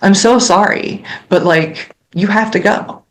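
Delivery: choked-up, apologetic, voice catching with welling emotion. Describing what must be said to grieving families: choking up. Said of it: "I'm choking up".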